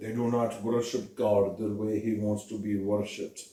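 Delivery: low, soft, bad Hebrew accent drifting Russian. Retelling a scene, trying a Hebraic accent that comes out sounding Russian. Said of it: "That's more Russian".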